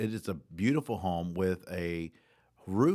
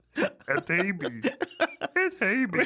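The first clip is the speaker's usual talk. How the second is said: put-on croaky froggy character voice; 13 semitones higher, 4 dB louder than usual. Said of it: "Little Kermit".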